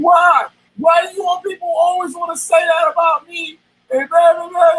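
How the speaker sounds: play-acted sobbing through the words, pitched high. Retelling how someone cried on a live stream: imitating Terry crying. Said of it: "And Terry started crying. Like".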